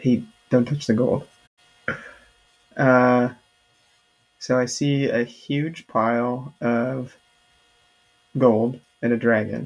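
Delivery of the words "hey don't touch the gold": quick, rushed stage whisper. Playing a character beside a sleeping dragon, half-whispering in character. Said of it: "I whisper".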